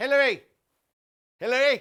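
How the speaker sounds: very loud, high shout projected to carry far. Calling to someone so she can hear, shouting. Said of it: "need to shout so she can hear you".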